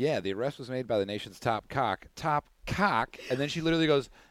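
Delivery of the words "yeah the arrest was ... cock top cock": newscaster delivery with a slip of the tongue. Retelling a newscaster's live slip: imitating a newscaster's on-air slip. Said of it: "And she was like".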